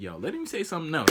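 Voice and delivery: ordinary talk, nothing marked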